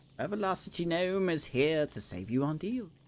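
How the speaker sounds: put-on British accent. Recalling a clip from twenty-five years ago, in a British accent. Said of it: "Like a British accent".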